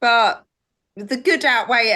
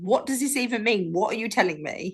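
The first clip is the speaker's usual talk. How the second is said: normal talking voice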